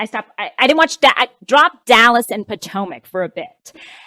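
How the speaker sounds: ordinary delivery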